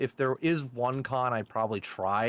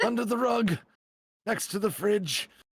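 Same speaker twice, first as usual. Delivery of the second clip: put-on elderly old man voice, higher; 8 semitones higher than usual. Showing off a great old man voice in a playful bit: old man voice. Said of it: "he thinks I have a great old man voice".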